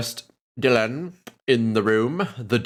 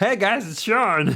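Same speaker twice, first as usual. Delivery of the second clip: high-pitched talking-cheeseburger character voice; 9 semitones higher than usual. Greeting a chat member as an imagined talking cheeseburger: talking cheeseburger voice. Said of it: "I just a cheeseburger talking".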